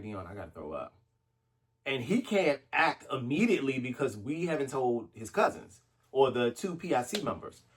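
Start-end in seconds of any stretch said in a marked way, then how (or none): 0.0-0.9 barely audible, very hushed half-whisper. Retelling what they said to him on the beach: retelling a half-whisper. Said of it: "I whispered to him".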